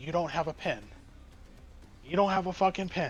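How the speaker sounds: mock male voice snapping from calm to furious. Retelling a guy who got pissed over a pen, imitating an angry man. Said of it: "he was pissed".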